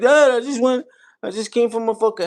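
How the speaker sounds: put-on stressed voice. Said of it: "I'm not making fun of him".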